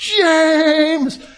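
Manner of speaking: proud, high, loud, drawn-out cheering shout. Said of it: "he had this voice".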